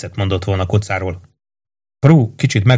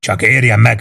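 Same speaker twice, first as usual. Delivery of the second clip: ordinary delivery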